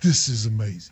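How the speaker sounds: very low, deep, soft, hushed put-on voice. Retelling how Milan looked up and reacted, Milan impersonation. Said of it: "that's my Milan impersonation".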